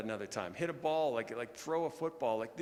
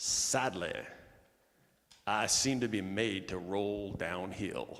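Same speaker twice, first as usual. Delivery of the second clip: slight put-on Tennessee accent, lower pitch; 6 semitones lower than usual. Quoting John Maxwell's opening words to a quiet auditorium: slight Tennessee accent. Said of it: "a little bit of a Tennessee accent".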